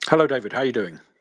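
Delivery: talking with mouth full. Greeting the other speaker while eating porridge: eating while talking. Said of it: "you sound like you're eating something".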